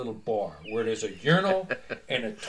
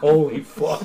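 put-on laughing while talking, louder; 2 semitones higher, 8 dB louder than usual. Retelling own reaction while in a bar toilet stall: imitating laughing while talking. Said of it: "I'm laughing like".

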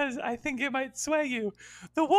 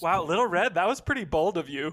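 ordinary talk

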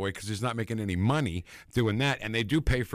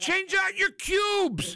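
play-acted very high, slow, drawn-out shrill yelling. Telling Paul about a guy you love, imitating his yelling voice from the specials. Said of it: "in that exact voice yelling every special".

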